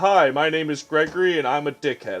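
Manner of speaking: assertive, confident tone, slightly faked. Showing the others how the contractor Garfield sounds: Garfield voice, assertive but faking it. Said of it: "Garfield sounds like this".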